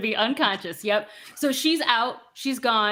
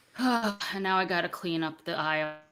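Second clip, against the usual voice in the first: put-on sighing, weary, put-upon teenager voice; 4 semitones lower, 5 dB quieter than usual. A game narrator voicing a teenager as the players leave, sighing teenager. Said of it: "the teenager just sigh and go".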